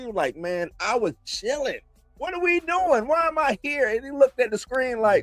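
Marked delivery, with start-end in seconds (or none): 0.4-3.9 baffled, totally lost, high little dragon voice. Voicing a small green dragon looking at the screen: imitating a confused dragon. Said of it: "Darion's dragon was confused as hell".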